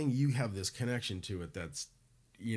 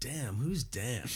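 mock irritated, annoyed, put-out grumble; 2 semitones higher than usual. Retelling a band member's reaction to the lineup: imitating an annoyed person. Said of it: "he was kind of annoyed".

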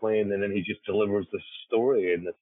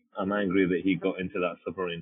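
plain

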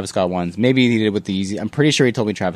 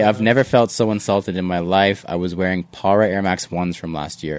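ordinary talk

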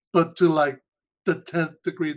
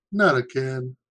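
mock deadpan, flat, expressionless delivery; 3 semitones lower than usual. Retelling a movie scene where a character's hand gets cut off: retelling a deadpan line. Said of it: "he just deadpan looks at the camera and goes".

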